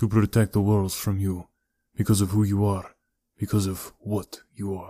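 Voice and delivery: ordinary delivery, nothing marked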